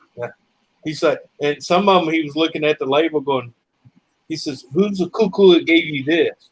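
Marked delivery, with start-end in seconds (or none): 4.7-6.4 put-on thick North Indian accent, laid on heavily. Quoting what a man said while looking at a label, heavy North Indian accent. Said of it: "heavy Northern Indian accent".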